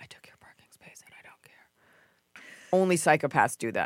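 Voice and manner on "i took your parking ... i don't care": very quiet, barely audible, villainous psychopath whisper. Demonstrating what a villain would whisper to someone: whispering. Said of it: "you whisper it".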